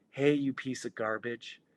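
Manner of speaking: voiced stage whisper. Retelling what the vultures on the headboard say each morning: half-whispering. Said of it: "they're whispering".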